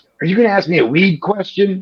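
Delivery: offhand, dismissive delivery. Retelling how a senator, Marco Rubio, brushed off questions: dismissive Marco Rubio impression. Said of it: "very dismissive".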